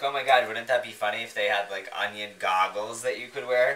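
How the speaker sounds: ordinary talk, nothing marked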